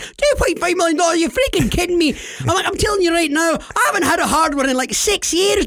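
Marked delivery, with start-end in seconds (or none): 0.0-2.1 acted-out excited screaming, much higher pitch. Recalling a phone call where the speaker got excited: retelling excited screaming. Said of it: "I'm all screaming".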